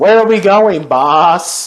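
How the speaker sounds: robotic voice. Imitating a robot sidekick's grating voice: imitating Jay Board's robot voice. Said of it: "Jay Board's voice".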